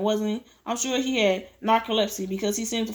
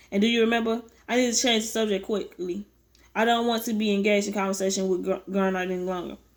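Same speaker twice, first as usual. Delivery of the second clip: usual speaking voice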